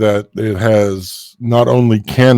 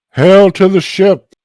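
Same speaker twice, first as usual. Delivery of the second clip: booming, amplified, very high echoing call; 10 semitones higher, 4 dB louder than usual. A voice calls out to the ship from a longboat, loud echoing call. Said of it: "the voice will echo".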